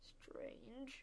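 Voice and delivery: very quiet, hushed, whispered grumbling mutter. Narrating Elliot after he slits open an envelope and pulls out its contents: muttered. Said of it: "he muttered".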